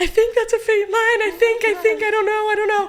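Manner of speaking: play-acted crying, very high-pitched, dithering and tearful. Retelling finding a faint line on a test: imitating own past crying. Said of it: "I'm, like, crying".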